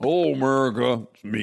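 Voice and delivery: slow commercial pitchman voice. Retelling a sketch about Quaker Oats: Wilford Brimley voice. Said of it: "the sketch was like".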